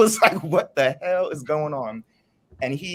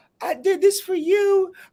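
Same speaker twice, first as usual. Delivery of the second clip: put-on sobbing, higher pitched. Retelling what the partner said after bursting out crying: imitating someone crying. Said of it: "bursted out crying and was like".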